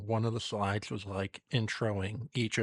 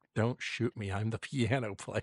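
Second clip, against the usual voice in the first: faint, barely audible put-on mutter. Retelling what someone said while leaving the room: imitating a faint mutter. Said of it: "hear the faintest".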